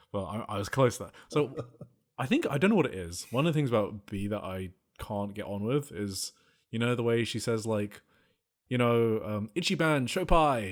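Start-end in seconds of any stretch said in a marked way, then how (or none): 9.5-10.7 exaggerated, thick British accent, raised. Speaker mimicking how b says a phrase, in the most british accent ever. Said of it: "in the most British accent ever".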